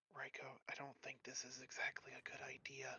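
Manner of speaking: very quiet, hushed, secretive whisper, very soft. Tabletop player in character whispering to raiko while she studies runes. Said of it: "I'm gonna whisper to her".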